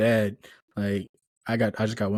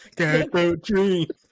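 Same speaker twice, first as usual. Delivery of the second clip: mock repeat in a higher voice; 9 semitones higher, 4 dB louder than usual. Repeating another speaker's odd delivery of a line: imitating their delivery. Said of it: "The way you said that".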